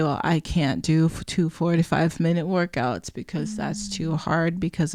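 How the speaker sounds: ordinary delivery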